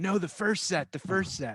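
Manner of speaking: repeated, shouted, high-pitched yell. Retelling what was yelled while muted on the call: imitating own past yelling. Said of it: "and I'm yelling".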